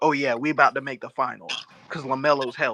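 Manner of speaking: ordinary talk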